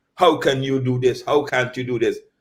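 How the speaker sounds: ordinary delivery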